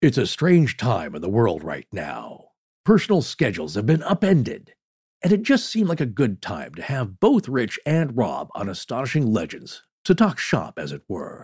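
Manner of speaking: documentary-style storyteller narrator voice. Asked by another speaker to do the show's intro, narrator voice. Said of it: "Do your narrator voice".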